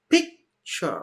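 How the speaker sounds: stress on pic in picture. Explaining stress in a two-syllable noun: stress on first syllable of picture. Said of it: "My stress was in the first part".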